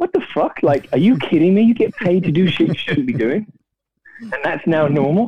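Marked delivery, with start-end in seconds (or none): 0.0-3.5 voice jumping way up, very high-pitched. Acting out the speaker's own past reaction, higher-pitched voice. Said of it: "higher voice".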